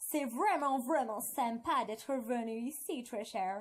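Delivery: poorly done put-on English accent. Friend showing another how to speak with an english accent, bad english accent. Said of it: "tu parles avec un accent anglais".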